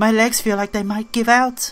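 high put-on girl voice. Player voices a female character's lines in a game, in a put-on girl character voice. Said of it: "I'll keep giving her a different voice".

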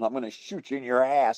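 put-on yelling. Retelling chasing off a man who went for the gun: retelling a yell. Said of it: "and I'm yelling".

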